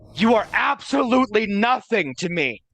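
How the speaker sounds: high, loud, all-out scream. A player's character screams at a blue dragon in Draconic, screaming. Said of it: "just like screaming out in Draconic".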